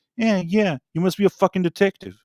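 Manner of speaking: sarcastic mocking tone. Retelling a man's reply after the speaker deduced a few things, Bill Burr impression. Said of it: "in his like Bill Burr's voice".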